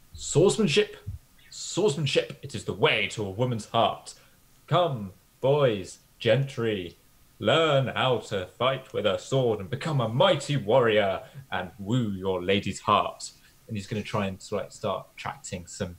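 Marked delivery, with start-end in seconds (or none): 0.2-13.3 very loud, grand, eloquent proclamation. After counting his swords, he turns to attract boys and gentry: loud, eloquent proclamation. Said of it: "in a very loud and very eloquent voice".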